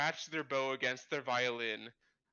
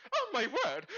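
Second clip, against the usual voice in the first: shrill, very high, loud shriek; 12 semitones higher, 5 dB louder than usual. Voicing a lady whose dress gets stained with punch: shrieking. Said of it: "some lady who shrieks".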